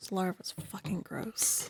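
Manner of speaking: whispered murmur, muttered under the breath. Retelling a game scene where Pochi murmurs under her breath. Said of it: "murmurs under her breath".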